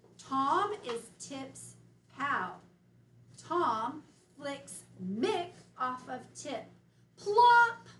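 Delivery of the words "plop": plop burst out very loud and higher. Reading a story sentence aloud, louder on 'plop'. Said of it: "Why did I increase my voice at plop?".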